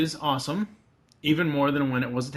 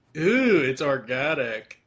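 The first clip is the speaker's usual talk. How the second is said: put-on, fake drunk voice. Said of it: "That's his drunk voice".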